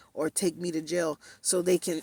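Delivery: ordinary delivery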